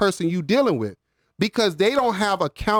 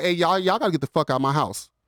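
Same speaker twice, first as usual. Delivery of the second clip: mock fed-up, annoyed, fast outburst; 2 semitones lower than usual. Retelling what they told guests still at their house late, retelling irritated words. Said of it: "Now I'm irritated".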